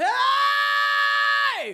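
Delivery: very high, very loud false-fold distortion scream. Showing a scream on a high note: distorted scream with false fold distortion. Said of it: "full normal vocal fold phonation, but also false fold phonation on top".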